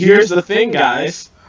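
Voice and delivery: loud, slow, sarcastic, condescending over-explaining.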